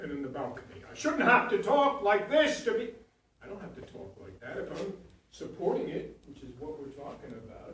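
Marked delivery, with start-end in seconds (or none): 0.9-2.9 very loud, high-pitched, raised shouting. Explaining voice support, the speaker demonstrates shouting. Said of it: "without shouting".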